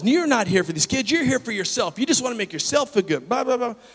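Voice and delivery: acted, escalating accusing tirade. Retelling a woman on the street questioning their motives: imitating someone getting louder. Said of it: "She's getting louder and louder and louder".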